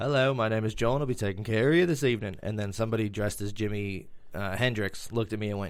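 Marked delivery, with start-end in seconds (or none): 0.0-2.4 put-on British accent. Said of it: "how good is my accent?".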